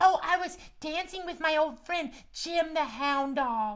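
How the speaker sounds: very high and cute voice. The host asks Max the cat about the barn dance; answering in Max the cat voice. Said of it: "what were you doing at the barn dance?".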